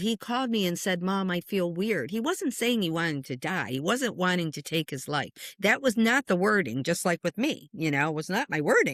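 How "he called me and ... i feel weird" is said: ordinary delivery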